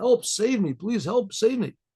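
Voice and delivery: put-on urgent, desperate, mild pleading cry. Retelling a story of someone stuck in rising water: imitating someone screaming for help. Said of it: "the rabbi's screaming and he's yelling".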